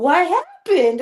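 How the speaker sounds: put-on small toddler voice. Retelling how a child threw a phone and asked: imitating Griffin. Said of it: "He's like".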